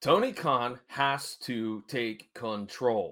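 very slow, deliberate, each word spaced out. Saying it slowly so everybody can understand, slow and deliberate. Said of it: "I said that slowly so everybody can understand that".

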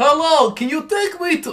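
booming, high, belted Russian accent. Friends ask to hear the Russian accent again: Borat-style Russian accent. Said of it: "let's hear your Russian accent again".

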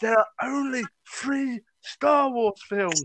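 put-on very broad, thick Scottish accent. Retelling an argument that got heated, quoting a big man in a heavy Scottish accent. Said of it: "going in a very heavy Scottish accent".

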